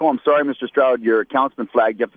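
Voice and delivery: ordinary talk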